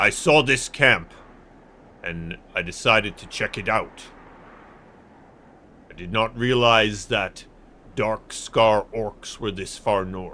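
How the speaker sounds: big, tough character voice. A hunting-party member explains how he came upon a camp, big tough voice. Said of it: "These big tough guys and their big tough voices".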